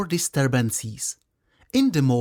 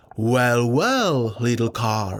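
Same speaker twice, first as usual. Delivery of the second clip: big, deep, low storybook character voice; 5 semitones lower than usual. The pike answers the little carp's greeting, in a deep voice. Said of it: "the pike replied in a deep voice".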